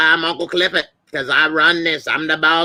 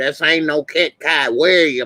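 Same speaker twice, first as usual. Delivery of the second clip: ordinary talk, nothing marked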